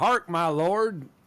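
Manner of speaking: very loud Texas drawl. Retelling a friend playing a Scottish role: imitating a Texas accent. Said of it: "used his normal Texas accent to play one of the".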